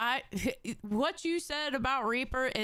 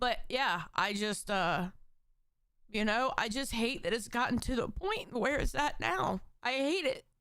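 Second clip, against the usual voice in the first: talking while crying, tearful through the words. Speaker on camera talking about fighting with their brother, crying while talking. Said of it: "I hate that I'm fucking crying on camera".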